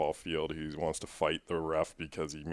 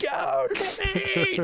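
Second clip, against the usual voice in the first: very high, shrill scream-like cheer; 7 dB louder than usual. Retelling how mom cheered in the bleachers: imitating mom screaming. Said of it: "Screaming at the people".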